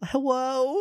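small, sad, high, pleading voice. Showing how a coworker reads hello: imitating a pleading sad hello. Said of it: "Like a pleading, sad thing".

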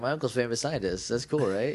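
smug, boastful, show-off tone. Retelling how a character introduced her uncle: imitating a braggy tone. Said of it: "in, like, a kind of a braggy way".

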